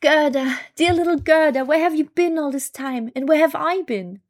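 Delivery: glad, heartfelt, joyful cry, high pitched and loud. After tears wash a glass splinter from his eye, he greets her joyfully. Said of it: "said joyfully".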